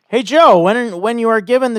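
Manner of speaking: sudden very high, loud voice shooting up. Speaker addressing Joe, voice going unexpectedly high. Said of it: "I don't know why I went that high with it".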